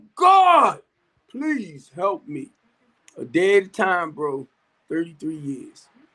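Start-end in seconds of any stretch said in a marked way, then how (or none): 0.2-2.5 slow, loud, drawn-out, swooping yell. Retelling crying out to God for help: retelling a yell. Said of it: "And I yelled out".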